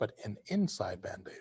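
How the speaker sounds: soft, whispered voice.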